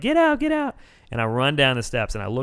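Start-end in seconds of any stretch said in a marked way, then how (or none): 0.0-0.7 imitated screaming, higher. Retelling fleeing an earthquake, imitating screaming at everybody. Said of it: "I'm screaming at everybody".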